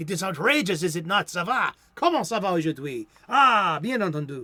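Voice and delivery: outrageous put-on thick, showy French accent. Reading from a story, chatting aside in an outrageous French accent. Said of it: "That is my French accent".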